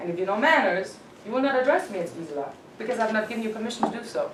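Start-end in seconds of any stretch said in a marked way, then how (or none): none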